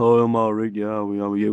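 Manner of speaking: level, even-toned, flat, monotone delivery. Mocking another speaker by imitating how he sounds: imitating Sam's voice. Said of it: "That's how he sounds".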